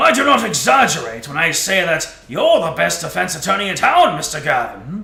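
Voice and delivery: big, grand, resounding, booming judge-like voice. Playing a role in a courtroom scene, addressing the defense attorney, in a big booming voice. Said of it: "I'm gonna do the booming voice".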